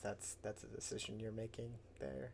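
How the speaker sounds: soft, hushed, half-whispered aside. Relaying to the group what Kroot said after an intelligence check: retelling Kroot's half-whisper. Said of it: "he kind of whispers to you".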